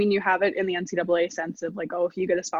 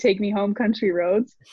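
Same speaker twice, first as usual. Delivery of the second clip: usual speaking voice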